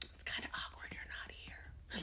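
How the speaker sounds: hushed, quiet whisper. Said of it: "You're like".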